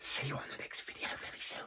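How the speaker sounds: whispered, very hushed and quiet. Signing off at the end of a video to viewers, whispering. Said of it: "Don't know why I'm whispering".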